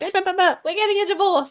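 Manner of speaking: mock angry, high, heated, blurted unfiltered rant. Retelling how she used to blow up in fights: imitating her past angry outburst. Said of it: "before I'd just be like".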